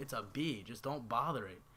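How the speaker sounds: plain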